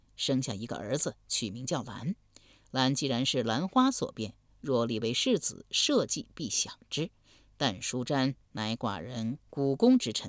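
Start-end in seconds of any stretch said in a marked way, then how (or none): none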